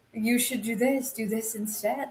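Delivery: hushed, small, soft, evil little voice. Retelling what an advisor whispered in someone's ear: evil little Jafar voice. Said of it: "Jafar voice in the ear of".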